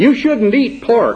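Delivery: put-on tiny, high, squeaky child's voice. Imagining a child looking up and speaking to a parent, in a little squeaky child's voice. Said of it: "says in his little squeaky children's voice".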